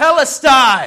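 very loud, high, full-throated, all-out scream. Retelling the cross scene, last breath drawn: imitating a scream as loud as possible. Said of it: "he screams as loud as he can".

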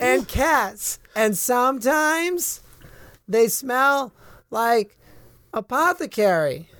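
squeaky, very high put-on cat voice. Answering questions as a calico cat, in a talking cat voice. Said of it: "The sort of calico one turns to you and goes".

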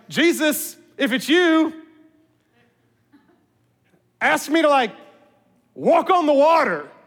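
tongue-in-cheek sarcastic, swooping sing-song delivery. Wondering aloud if Peter spoke sarcastically to Jesus: acting out Peter's sarcasm. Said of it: "Peter asked that sarcastically".

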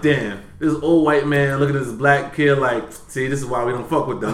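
ordinary delivery

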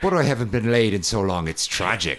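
put-on Irish accent, horror-film creature voice. Retelling a movie scene where the Leprechaun speaks, Leprechaun voice like Warwick Davis. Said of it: "Like Warwick Davis in the movie Leprechaun".

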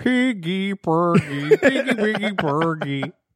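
very high, slow, drawn-out nonsense babble. Podcast host imagining a puppet's voice, slipping into a Swedish Chef impression. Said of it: "an impression of the Swedish chef going".

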